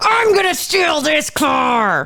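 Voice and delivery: angry high shout with attitude, car drawn out. Joking about car theft with attitude: mock angry shout. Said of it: "Steal it angry".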